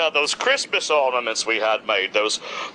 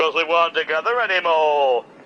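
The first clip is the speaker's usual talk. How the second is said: put-on Scouse Liverpool accent delivery. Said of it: "I guess I did say it like that".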